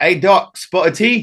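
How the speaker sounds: put-on British accent, high pitched, slow, lilting. Retelling a firefight where a Royal British Marine speaks to the speaker, in a British Marine impression. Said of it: "one unit of Royal British Marines".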